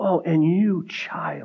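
put-on cracking voice, soft, very slow and drawn out. Acting out a father holding his child, imitating his voice cracking. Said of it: "his voice might have cracked a little bit".

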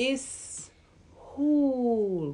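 terrible, clumsy, botched character voice, soft and hushed. Retelling a scene, quoting Michel in a Michel impression. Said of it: "That's the worst Michel impression ever".

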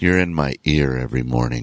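low, flat, play-acted deadpan monotone. Retelling what a man in the booth told DJ James, imitating a deadpan monotone. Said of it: "Just like that. Monotone, deadpan".

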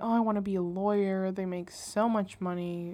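ordinary delivery

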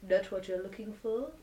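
eerie, menacing, hushed, put-on creepy voice. Acting out a scene, standing right behind a creeped-out character, put-on creepy voice. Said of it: "Creepy voice".

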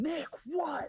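put-on shrill, very high, muffled distant yell. Retelling hearing someone down the hall: imitating a muffled yell. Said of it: "muffled yell down the hall".

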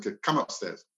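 usual speaking voice

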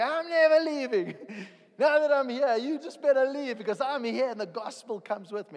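high, loud screaming at the top of the lungs. An evangelist retells what they shouted; retelling own shouting. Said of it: "So I start shouting".

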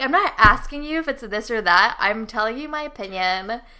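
ordinary talk, nothing marked

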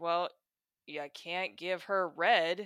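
slow, snide, mean-spirited sarcastic drawl. Quoting the rabbit from a picture book: sarcastic Mister Rabbit voice. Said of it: "He's just very sarcastic".

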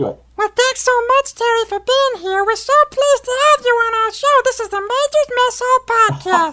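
very high-pitched puppet voice. Asked to let them hear your Elmo, thank Terry for being on the podcast in an Elmo voice. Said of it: "Let's hear your Elmo".

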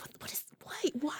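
breathy whisper, baffled and lost for words.

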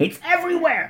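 high, fixated, fussing voice. Doing an impression of somebody extremely obsessed with dust. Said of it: "my impression of somebody who is extremely obsessed with dust".

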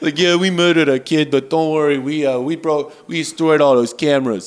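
dumb oafish cop voice. Acting out the police response in a story, in a dumb oafish cop accent. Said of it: "What accent are you doing?".

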